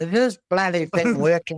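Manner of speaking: put-on gummy, toothless old lady voice. Retelling a woman on a Messenger call, imitating a toothless old woman. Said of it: "she had no teeth and she'd be like this".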